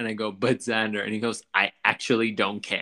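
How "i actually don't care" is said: put-on angry dismissive tone, slower. Retelling an argument from a video, the speaker acts out his mock-angry reply. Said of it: "I don't care when he's angry".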